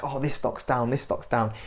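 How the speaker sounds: ordinary talk, nothing marked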